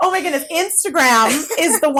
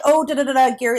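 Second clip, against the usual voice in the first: usual speaking voice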